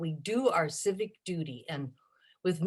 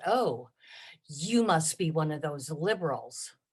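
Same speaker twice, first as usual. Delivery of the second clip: play-acted, really nasty, rude tone; 3 semitones lower than usual. Retelling what a rude visitor said at the door: imitating a nasty tone. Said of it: "in a really nasty tone".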